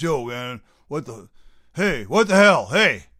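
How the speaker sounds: very loud, booming, put-on New York accent. Retelling how one used to talk as a kid: imitating own old new york accent. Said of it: "I was talking like this".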